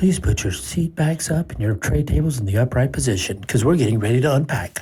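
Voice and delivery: put-on in-flight airline announcer delivery. Showing how to say unpack as an airplane announcement: put-on airline announcer voice. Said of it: "It's about the airplane voice".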